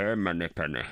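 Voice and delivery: muffled voice, as if through cloth. Doing a movie line as an impression, hand over face: Sean Connery impression. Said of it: "I just do Sean Connery with my hand over my face".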